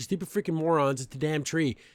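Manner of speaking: ordinary talk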